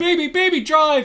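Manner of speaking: frantic, very high, panicked, pleading freak-out. Retelling a film scene where the character urges him to drive: imitating Florence Pugh freaking out. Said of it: "freaking out".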